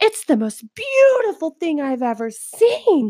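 mock high, swooping, gushing, wonder-struck awe. Retelling a lady's reaction to a ride: imitating genuinely excited awe. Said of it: "the way she showed her excitement".

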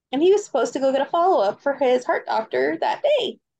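normal talking voice

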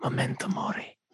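hushed, breathy whisper. Playing the slave who whispers to a victor: whispering.

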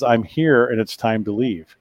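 whispering. Retelling a woman's voice heard on a camera recording: imitating a whisper. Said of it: "this whisper comes over my camera".

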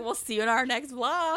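put-on drunk slurred speech. Retelling own words at the end of a wedding vlog: imitating drunk slurred speech. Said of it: "hella hammered".

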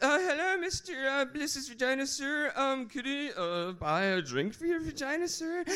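put-on meek, hesitant, timid, girlish little boy voice. Voicing suitors who crawl over to ask for a drink: speaking like a little girly boy. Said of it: "they will speak like little girly boys".

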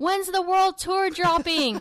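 put-on, high, yelled-out shout.

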